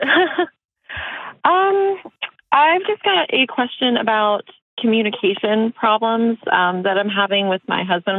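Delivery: nervous, halting, high and slow voice. Caller asking the host a question about her husband: nervous. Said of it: "I'm really, really nervous".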